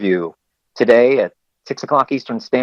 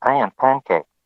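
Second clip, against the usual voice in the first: put-on mechanical robot voice. Copying the robot voice they use, to a co-host: robot voice. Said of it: "That kind of voice".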